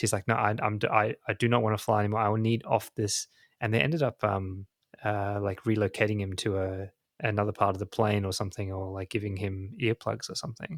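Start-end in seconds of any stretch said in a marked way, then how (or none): 0.3-3.3 mock frantic man's outburst. Retelling a plane incident, the speaker acts out a man going nuts. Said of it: "he was just going nuts".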